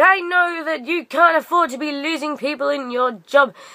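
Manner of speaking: play-acted, high-pitched, toned-down shout. Retelling a customer shouting across the store: imitating someone shouting. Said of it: "she starts shouting at me from across the store".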